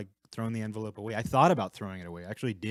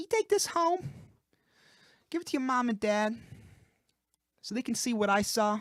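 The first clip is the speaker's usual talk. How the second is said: very high, bright, cheerful teacher voice; 14 semitones higher than usual. Recounting a teacher handing over an envelope to take home, mock-cheerful Mrs. Prather impression. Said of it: "I don't know what that voice is".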